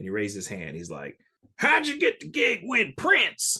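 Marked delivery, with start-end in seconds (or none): 1.6-3.6 put-on Southern accent with very high voice. Retelling a clinic attendee's question to the drummer, imitating a Southern accent. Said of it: "this guy stood up with a Southern accent".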